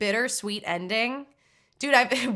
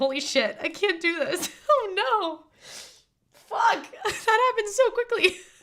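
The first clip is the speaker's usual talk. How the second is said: very high, emotion spilling over, overwhelmed; 11 semitones higher than usual. Speaker talking about a sad story about a fox, getting emotional. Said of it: "Oh my God, I'm getting emotional".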